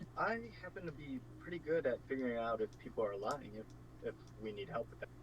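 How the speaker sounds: hushed, private whispered aside. Player speaking only to Seraph, whispering. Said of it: "I'm whispering that to Seraph".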